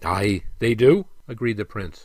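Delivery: ordinary delivery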